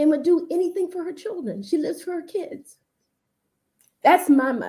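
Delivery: tearful, crying voice. Guest on a show talking about their mother, crying. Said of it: "And so I'm crying already".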